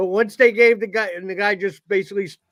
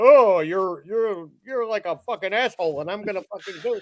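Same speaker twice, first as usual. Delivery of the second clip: put-on douchey crab voice. Describing the telepathic crabs, imitating their douchey crab voice. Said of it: "they have the douchiest fucking voice".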